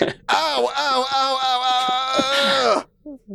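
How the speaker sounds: put-on, very slow, high, drawn-out, pained crying "ow"s. Retelling a back adjustment that hurt, acting out pained cries. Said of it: "It hurts so bad".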